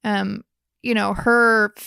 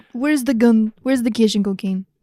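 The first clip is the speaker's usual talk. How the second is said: put-on bad Russian accent. Mocking an actor's line as a Russian gangster, in a bad Russian accent as Tig. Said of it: "a terrible accent".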